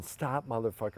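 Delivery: plain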